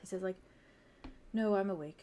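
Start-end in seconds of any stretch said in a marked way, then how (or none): 1.3-2.0 low, quiet, muttered under breath. Voicing a winged character replying that he is awake: low, under his breath. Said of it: "says kinda low and, like, under his breath".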